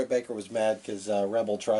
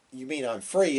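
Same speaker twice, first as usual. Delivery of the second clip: ordinary delivery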